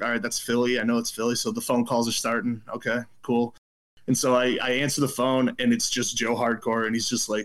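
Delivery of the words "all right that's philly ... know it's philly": usual speaking voice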